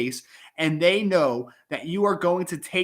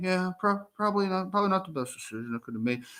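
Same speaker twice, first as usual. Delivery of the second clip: soft, low-key mumbled delivery; 5 dB quieter than usual. A teacher retells how a kid answers when taken into the hallway, imitating a mumble. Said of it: "like they mumble".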